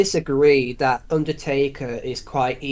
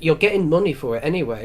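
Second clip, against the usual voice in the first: usual speaking voice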